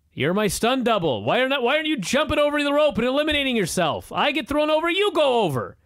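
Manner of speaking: mock shrill screaming tirade, very high. Recounting a wrestling match, the speaker acts out Miz yelling at Mizdow: retelling Miz's yell. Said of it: "he starts yelling at Mizdow".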